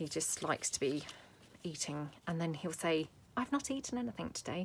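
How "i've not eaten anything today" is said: hushed, kept-down voice, slightly higher. Quoting the husband in case he is listening: lowered voice. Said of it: "lowering my voice in case you're listening".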